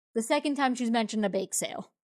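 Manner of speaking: ordinary talk, nothing marked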